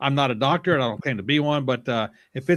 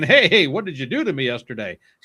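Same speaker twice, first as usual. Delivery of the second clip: louder put-on character voice; 4 dB louder than usual. Explaining soreness after exercise, speaker voices the muscles talking back, voicing sore muscles. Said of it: "your muscles saying".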